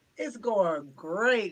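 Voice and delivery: loud, enthusiastic, full-chested delivery. Host shows his co-host how to answer, with enthusiasm. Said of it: "Say it with enthusiasm".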